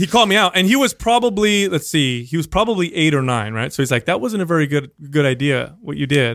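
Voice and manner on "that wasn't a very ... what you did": mock-calm delivery. Retelling what their son, eight or nine, told them: imitating a calm voice. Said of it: "Very calm, he said to me".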